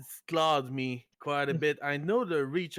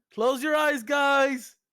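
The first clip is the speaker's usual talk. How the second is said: put-on shrill, very high, loud scream; 11 semitones higher, 6 dB louder than usual. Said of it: "I'm just gonna scream".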